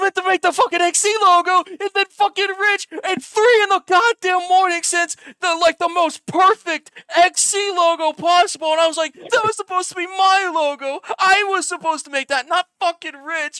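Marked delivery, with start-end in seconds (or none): 9.1-13.6 put-on screaming, higher and louder. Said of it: "I was screaming".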